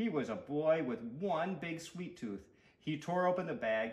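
ordinary delivery

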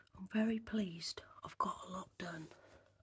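hushed voice. Back from a ten-minute break to get on with chores, whispering. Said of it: "I don't know why I'm whispering".

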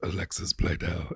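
put-on deep, low, hushed spooky voice. Asked to show what is heard from the bedroom corner: deep voice saying an actress's name. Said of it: "The deep voice when you say one actress's name".

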